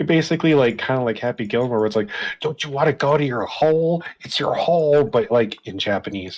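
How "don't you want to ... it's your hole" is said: berating voice with raised pitch. Describing a man smacking something with bare hands, retelling Happy Gilmore shouting. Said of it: "just like shouting at it".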